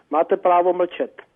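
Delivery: fast native-speed Czech, rattled off. Asked to say the czech phrase slowly, the speaker says it fast. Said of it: "That's pretty damn fast".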